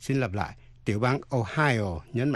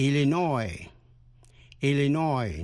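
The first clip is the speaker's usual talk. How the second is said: Illinois said with last syllable stressed. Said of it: "Nhấn mạnh vần cuối".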